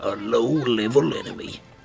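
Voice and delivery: gravelly, creaking cartoon voice. Recalling an Adventure Time episode, doing a Jake the Dog voice. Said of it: "that's my impression of of Jake the dog".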